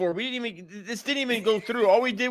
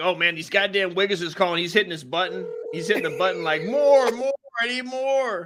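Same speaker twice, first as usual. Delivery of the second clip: usual speaking voice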